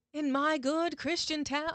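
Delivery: high, slow, bad American accent. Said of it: "I can't do an American accent".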